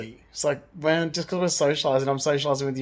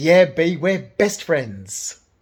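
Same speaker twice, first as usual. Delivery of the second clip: loud, drawn-out, mocking sarcastic sing-song; 6 dB louder than usual. Retelling an eye-rolling reply to the hairdresser, acting sarcastic. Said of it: "it was so sarcastic. It was like, ... like that".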